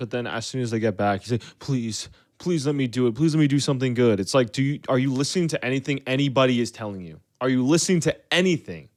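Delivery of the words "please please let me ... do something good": acted-out begging, pleading voice. Retelling how a character kept begging to be allowed: imitating someone begging. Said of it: "begging him to".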